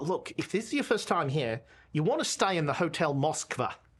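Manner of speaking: put-on heavy Australian accent, laid on thick. Voicing a priest who greets the players: thick Australian accent. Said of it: "a very thick Australian accent".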